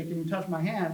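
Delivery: ordinary delivery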